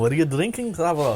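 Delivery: bad Scottish accent with laughter.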